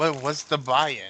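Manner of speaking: put-on acted drunken voice. Voicing a character at a card table, asking the buy-in: drunken voice. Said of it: "And then Narsa drunkenly".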